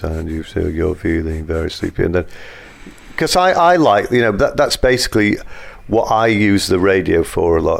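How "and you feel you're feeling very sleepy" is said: gentle trance-like hypnotist voice. Speaker demonstrates how a hypnotist talks, in a hypnotist voice. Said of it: "you talk in that voice like this".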